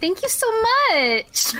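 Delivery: put-on customer-service voice. A player voices their character giving an answer, customer service boy voice. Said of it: "put on a customer service boy voice".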